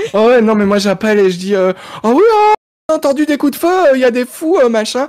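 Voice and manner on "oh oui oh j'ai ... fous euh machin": put-on flustered, panicked little old lady voice, pitched up. Calling the police in a game scene: imitating a panicked little old lady. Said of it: "je prends une voix de petite vieille paniquée au téléphone".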